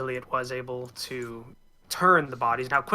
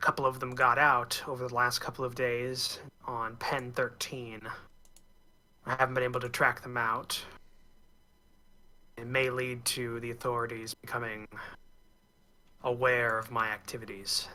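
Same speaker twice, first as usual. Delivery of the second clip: raspy, rasping voice; 7 dB quieter than usual. Playing a found recording of a journal entry: raspy voice. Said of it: "Kind of a raspy voice comes up".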